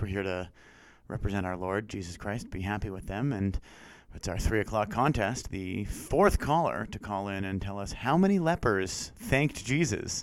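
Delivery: low, reverent, churchy radio announcer delivery.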